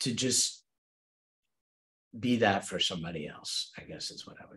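soft, choked-up near whisper. Answering a panel question about what to say to an author, choked up. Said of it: "I'm going to get choked up saying this".

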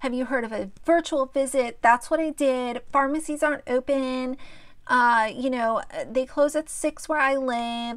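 snooty, condescending, defensive talking-down tone. Quoting a woman answering someone who suggested a doctor, mock-condescending tone. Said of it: "very condescending tone".

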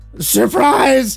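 screaming. Narrating a story, a man lunges from behind the bar, screaming through bloody teeth. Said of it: "He screamed through bloody teeth".

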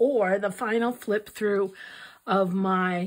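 plain

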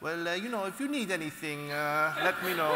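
concerned tone in a thick Italian accent.

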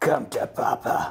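dark, sinister, menacing villain voice. Speaker backing up files before shutting the system down, in a sinister voice. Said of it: "Why do I sound so sinister?".

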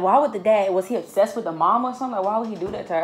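ordinary delivery

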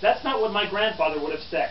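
ordinary delivery

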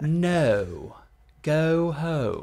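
received pronunciation with drawn-out diphthong on "no". Showing a vowel drill after being asked for some RP: received pronunciation accent. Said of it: "can you do a little bit of, of that, that R P?".

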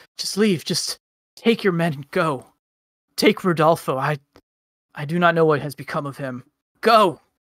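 stuttering, stammering, tripping over words. Voicing a character after an attack on her does no damage: stammering. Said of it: "She's stammering now".

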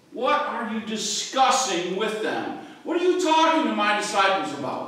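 sharp, cutting, pointed, confrontational tone. Acting out Jesus questioning the crowd: sharp tone as Jesus. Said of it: "he's got kind of a sharp tone to his voice here".

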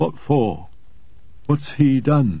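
stunned, bewildered voice. Shown a warrant for his master's arrest, he asks the visitor in a dazed voice. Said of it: "asking in a dazed voice".

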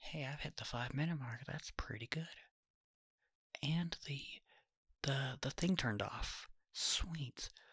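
soft-spoken rambling. Speaker switches from whispering to soft spoken rambling, soft spoken. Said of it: "Gonna do soft spoken and rambling".

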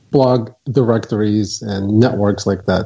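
normal talking voice

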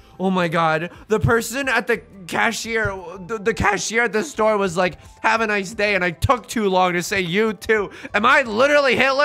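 acted, frantic, very loud, high, anxious spiraling rant. Retelling someone acting out her own worried spiral to her partner: acting out an anxious spiral. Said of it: "sometimes I'll spiral being like".

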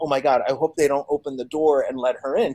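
ordinary talk

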